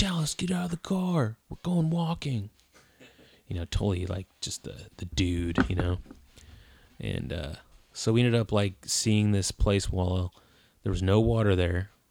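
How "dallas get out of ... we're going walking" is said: hollering, very high-pitched and shrill. Retelling a call to dallas to leave the car: imitating someone yelling. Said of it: "yelling out".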